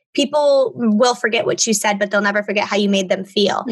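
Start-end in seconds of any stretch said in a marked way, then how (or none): none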